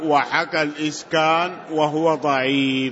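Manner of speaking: ordinary delivery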